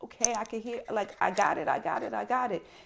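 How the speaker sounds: words pushed out in yelping cries. Retelling being against the wall while washing dishes, answering him: retelling a yelp. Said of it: "I'm literally like yelping".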